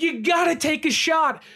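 mock pressing, urgent, insistent, frustrated tone. Recalling watching a football game after a key safety got hurt: retelling a yell at the TV. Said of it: "And I'm yelling at the TV".

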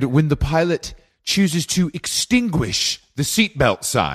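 grand, overly dramatic period-drama announcing, swooping pitch. Retelling a flight steward's loudspeaker announcement: imitating a dramatic flight steward. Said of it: "it was very dramatic".

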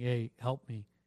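ordinary delivery

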